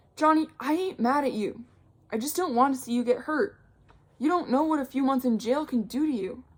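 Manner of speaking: high, earnest, begging pleading voice. Narrator reads one character pleading with another, in a pleading, high voice. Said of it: "Dolly said in a pleading, high voice".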